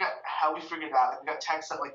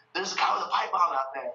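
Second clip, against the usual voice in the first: mock, rushed, hurried alarmed shouting; 3 semitones higher, 3 dB louder than usual. Retelling what a man yelled after slamming the door, retelling a yell. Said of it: "He yells like".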